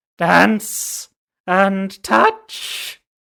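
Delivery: high, swooping, deranged voice without sanity. A narrator reading a story voices a creature's line in a high-pitched insane voice. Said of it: "in a high-pitched voice that held no hint of sanity".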